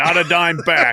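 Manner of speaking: put-on speaking with a New England accent. You are acting out Calhoun's words to another speaker, in Calhoun's New England accent. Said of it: "in that New England accent".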